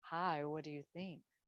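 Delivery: hushed, on-air radio announcer voice. Speaker practicing a radio voice while greeting listeners, radio voice. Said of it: "practicing my radio voice".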